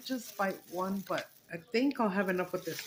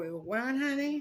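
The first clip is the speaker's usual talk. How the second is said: put-on New York accent, pitched up; 6 semitones higher than usual. Retelling what a neighbor's husband said: imitating a New York accent. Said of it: "con el pinche New York accent".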